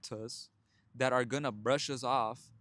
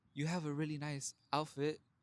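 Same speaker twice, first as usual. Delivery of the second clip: shy, very timid, soft voice; 2 semitones higher, 7 dB quieter than usual. Retelling how she finally talked to a lady, acting out being very timid. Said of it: "Very timid".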